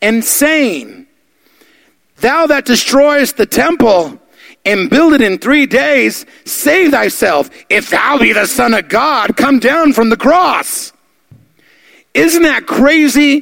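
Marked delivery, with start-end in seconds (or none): 0.0-10.9 high, slow, mocking taunting tone. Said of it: "Listen what they say".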